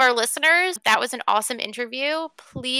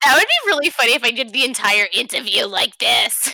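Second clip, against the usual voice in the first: louder, throat-straining character voice; 4 dB louder than usual. In an interview, asked about doing the whole interview in Greg's voice; Greg's voice. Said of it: "My throat would, like, fall out of my neck".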